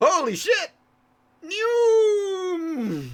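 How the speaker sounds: whiny shouting. Voicing a voice shouting behind the departing players: whiny shout. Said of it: "a whiny voice shouts".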